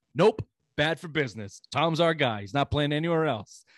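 snide, backhanded, sarcastic, dripping with irony. Retelling a coach's answer about a quarterback returning: imitating Bruce Arians sarcastically. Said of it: "it sounded kinda sarcastically like".

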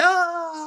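screaming in panic. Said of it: "and I was screaming".

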